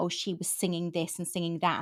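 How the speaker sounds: ordinary delivery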